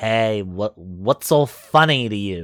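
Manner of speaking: loud, slow, deliberate little goblin voice. Voicing a goblin who challenges a laughing character: goblin voice. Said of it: "As the goblin looks up at you and he's like".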